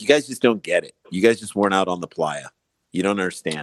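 ordinary talk

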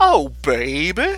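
put-on "baby" said with a strong, laid-on southern twang. Describing a favourite movie line delivery, quoting Keanu in his southern twang. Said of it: "in like this real southern twang".

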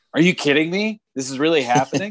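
high, stunned and surprised, sounding in disbelief. Retelling own call of a grand slam: imitating own surprised call. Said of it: "the surprise in my voice when he hit the ball".

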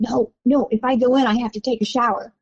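ordinary delivery

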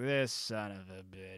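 very low, slow mutter under the breath. Describing a film scene, acting out what one man says: muttering under breath. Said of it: "like under his breath".

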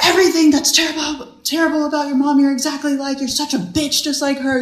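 high, furious flipped-out rant. Retelling what he said while flipping out: imitating someone flipping out. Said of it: "he flipped out on me".

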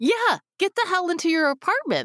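high-pitched, urgent, alarmed call-out.

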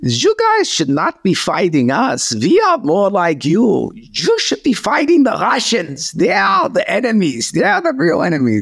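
very high, animated, swooping put-on German accent. Quoting the guy putting slop on plates, in a put-on German accent. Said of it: "let me see if I can do a German accent".

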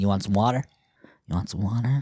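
low devil voice speaking as a snake. Posing as a devil-snake offering water in the desert: devil snake voice. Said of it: "I come to you as a snake going".

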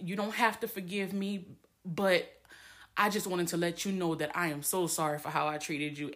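usual speaking voice

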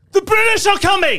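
very high-pitched voice, called out. Giving a hint about a costume: Paul Revere call. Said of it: "Paul Revere?".

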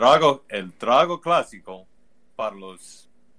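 put-on telenovela-style voice. Told to keep going, the speaker continues the bit in a telenovela voice. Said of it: "when I do my telenovela voice".

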